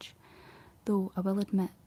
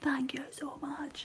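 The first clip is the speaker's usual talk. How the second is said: mock gushing, over-eager, excited, shouting; 6 semitones higher, 4 dB quieter than usual. Retelling replying to comments with voice notes: imitating own past shouting. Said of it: "shouting down the phone".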